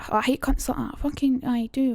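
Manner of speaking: imitated Edinburgh speech. Reading a Trainspotting speech aloud: put-on Edinburgh accent. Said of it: "I'm trying to think of the Edinburgh accent".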